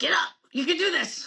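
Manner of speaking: high, small Filipino military-style voice. Recalling how a father urged the speaker to get up and train; little Filipino military voice. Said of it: "in his little Filipino military voice".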